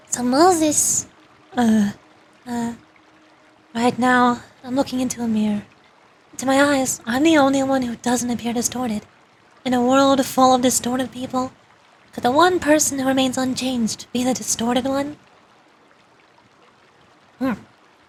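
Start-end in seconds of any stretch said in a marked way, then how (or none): 3.7-15.1 motherly, mom-like voice. Voicing a game character looking into a mirror, in a mommy voice. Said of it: "It sounds more like mommy voice".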